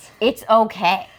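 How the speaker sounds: mock soothing, calming husband voice. Retelling the husband trying to relax his wife: imitating a soothing husband. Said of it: "So he puts his hand on me and is like".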